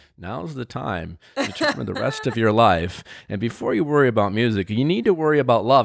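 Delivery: put-on deadpan, grave, serious host voice, no humour. Retelling how Chris walked in and spoke: imitating a deadpan serious host. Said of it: "he walks in deadpan serious".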